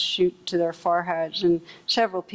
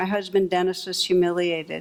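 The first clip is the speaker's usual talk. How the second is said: plain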